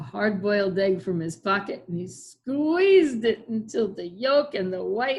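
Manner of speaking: ordinary delivery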